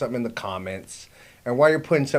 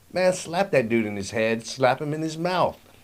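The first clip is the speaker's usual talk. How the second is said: plain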